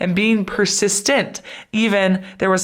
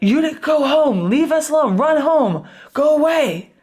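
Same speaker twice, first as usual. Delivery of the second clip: mock barking, pitched up and slow; 7 semitones higher, 3 dB louder than usual. Retelling how a man barked at a woman who stood firm, imitating barking orders. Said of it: "he's like barking at her".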